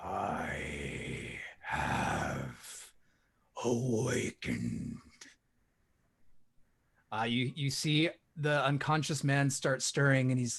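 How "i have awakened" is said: very low, deep voice. Voicing a voice coming out of the growing darkness: voice from the darkness. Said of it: "you hear a voice coming out of the darkness".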